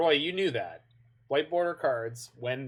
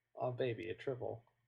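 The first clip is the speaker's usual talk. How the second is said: very quiet, super deadpan, dead flat delivery; 11 dB quieter than usual. Telling Roy what their good friend Liam would say: super deadpan Liam impression. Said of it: "Just like super deadpan".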